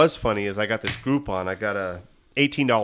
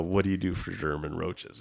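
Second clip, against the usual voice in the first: mock sultry whisper, lower and quieter; 3 semitones lower, 6 dB quieter than usual. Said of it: "like, a super sexy voice".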